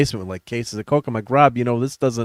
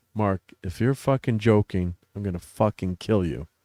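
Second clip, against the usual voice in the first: quiet, grave, dead-serious, play-acted tone; 3 semitones lower, 5 dB quieter than usual. Recounting a good friend, later his best man, threatening him; imitating a dead-serious threat. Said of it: "He like really serious".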